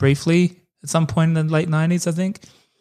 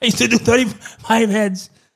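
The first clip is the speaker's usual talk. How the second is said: put-on breathless voice, higher; 6 semitones higher than usual. Redoing a Danny DeVito impression after being told he runs out of breath: breathless Danny DeVito impression. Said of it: "he runs out of breath a little".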